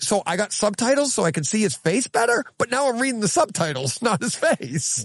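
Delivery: high, mock exasperated voice.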